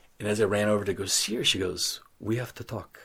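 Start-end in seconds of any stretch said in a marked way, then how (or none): 2.2-3.0 best attempt at a put-on French accent. Retelling his girlfriend meeting him after three weeks apart, in his best French accent. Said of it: "That's my best French accent".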